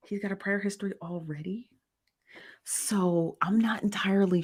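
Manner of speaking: hushed whisper under the breath. Speaker updating listeners on a man's bond hearing: whispering. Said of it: "I don't know why I'm whispering".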